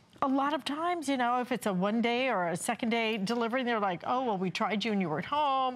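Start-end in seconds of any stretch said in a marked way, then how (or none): none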